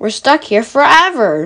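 plain reading voice

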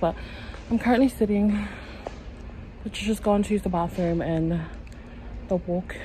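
short of breath. Telling viewers about just walking back from the bathroom, out of breath. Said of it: "I'm out of breath".

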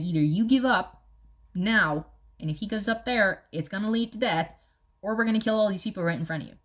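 ordinary talk

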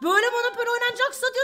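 mocking imitation, high pitch, fast pace.

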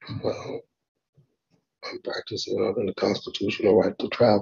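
barely audible, very hushed whisper. Answering a question about pleading to a lesser charge: whispering. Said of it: "What you whispering for?".

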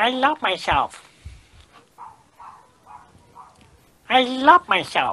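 sing-song cartoon mouse voice, high and swooping. Leading a self-love exercise, repeating the affirmation in a Mickey Mouse voice. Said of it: "Say it in Mickey Mouse language".

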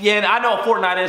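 ordinary talk

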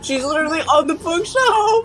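voice cracking, breaking in the middle of the line. Reacting as she ends up on the bookshelf, with a voice crack. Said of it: "What was that voice crack?".

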